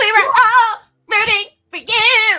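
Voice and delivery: belted out high and loud. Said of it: "In my Tyra Banks voice".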